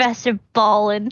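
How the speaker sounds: snide, sniggering, quietly snickering. Voicing a character mocking a priest's name: snickering to herself. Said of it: "kinda snicker to herself".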